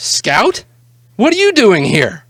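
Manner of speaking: high, loud, surprised voice.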